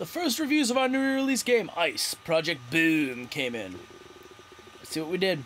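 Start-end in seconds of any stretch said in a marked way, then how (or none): 1.8-3.3 "boom" punched hard at the end. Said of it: "You gotta say it with that inflection".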